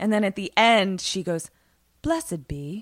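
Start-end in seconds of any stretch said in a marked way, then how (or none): 2.0-2.8 put-on creepy, eerie woman's voice with half-British accent. Recounting an eerie announcement's closing words, creepy semi-British lady voice. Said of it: "like that creepy, like semi-British lady voice".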